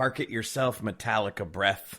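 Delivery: ordinary talk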